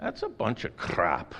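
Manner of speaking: half-managed, attempted put-on Scottish brogue. Speaker retells their reply to dads, attempted Scottish accent. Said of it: "say it with a Scottish accent. Or an attempted one".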